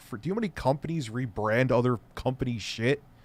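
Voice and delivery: plain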